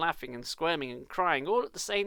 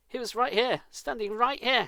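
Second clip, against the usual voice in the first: scared, shrill, frightened cry, pitched up; 7 semitones higher, 4 dB louder than usual. Narrator reads Zack's line after a silence, in a shrill, frightened voice. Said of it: "Zack said in a shrill, frightened voice".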